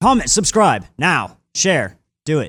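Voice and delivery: high, angry, scolding voice. Asked by another speaker to do an angry voice: angry voice. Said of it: "do you have an angry voice so you can do it?".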